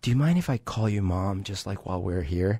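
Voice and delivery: small, shy, soft, hushed half-whisper. Retelling asking an aunt at the doctor while sick: retelling a half-whisper. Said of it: "I whispered".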